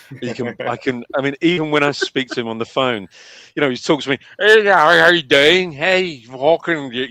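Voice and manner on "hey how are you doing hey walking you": put-on loud, broadest Northern Irish accent, laid on thick. Retelling a friend greeting them on the phone, broad Northern Irish accent. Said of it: "he has the broadest Northern Irish accent".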